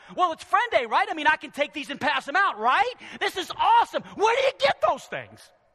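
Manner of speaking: high, loud, excited, fired-up gushing shout. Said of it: "a church that's on fire is like".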